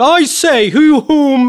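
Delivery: very high, very slow, drawn-out put-on voice. Retelling his reply to an acquaintance's Facebook quote, the speaker does his Arthur voice. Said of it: "Doing your Arthur voice".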